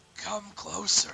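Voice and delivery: raspy crone voice. Voicing a hag who calls a player closer: raspy hag voice. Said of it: "so it's a hag".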